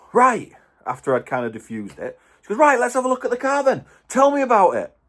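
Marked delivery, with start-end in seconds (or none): 2.5-4.8 mock pushy, confrontational, fast, pitched-up and aggressive. Retelling what a woman said to the speaker right after a confrontation, imitating an aggressive tone. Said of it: "Really, like, aggressive".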